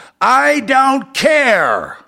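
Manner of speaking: very high, shrill, swooping scream at top of lungs, stretched. Retelling what a guy screamed at them, retelling a scream. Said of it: "the guy screams at the top of his lungs".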